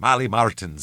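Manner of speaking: put-on Irish accent. Showing how the name sounds said with an irish accent. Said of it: "if you say my name with an Irish".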